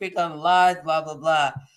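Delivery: ordinary talk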